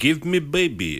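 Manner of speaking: man's put-on Russian accent, loud and high. Quoting a film character who asks for a baby: imitating a Russian man. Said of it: "he sounds like, it's like a Russian man".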